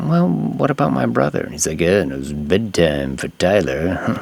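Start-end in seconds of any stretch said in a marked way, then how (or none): 1.8-4.2 sleazy guy voice, slow insidious drawl. Retelling a movie scene, imitating a character as a douchebag. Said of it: "I'm making him sound like a douchebag".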